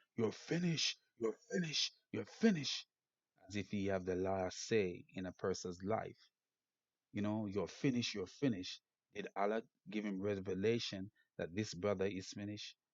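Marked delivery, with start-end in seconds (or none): 0.2-2.9 acted bullying yell, high pitched, repeated three times. Criticizing Mohammad Hijab for berating a brother: retelling Mohammad Hijab's shouting. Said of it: "He was shouting".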